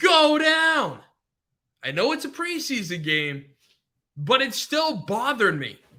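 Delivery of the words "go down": frustrated, loud, pitched-up scream. Retelling yelling at the TV during a game: retelling own yelling at TV. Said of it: "I was screaming at my T V, yelling him".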